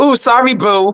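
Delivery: high, meek, apologetic squeaky voice. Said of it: "I was gonna be like".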